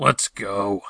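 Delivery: low, curt, grumbling mutter. Narrator voices Elysian as they dodge falling debris, muttering. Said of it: "Elysian muttered".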